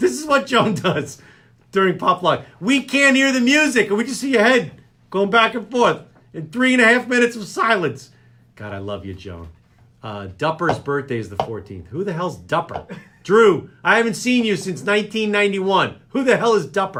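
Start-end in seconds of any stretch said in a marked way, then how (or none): 11.9-17.0 shouting, higher and louder. Reading out names and asking who someone is: yelling. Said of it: "wanna know why am I yelling".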